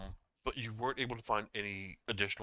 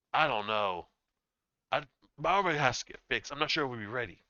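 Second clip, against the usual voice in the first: loud, put-on orc character voice; 4 semitones higher, 8 dB louder than usual. Narrating a fantasy scene, the orc pauses and answers in an orc voice. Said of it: "The orc pauses and goes".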